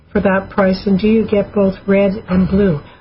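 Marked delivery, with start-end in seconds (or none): none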